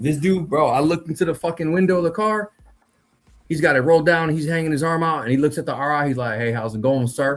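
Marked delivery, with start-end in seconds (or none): 6.4-7.4 put-on Appalachian accent, much lower. Retelling a Ranger course story, the speaker imitates an Appalachian local greeting the instructor. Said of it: "local fucking national from Appalachia".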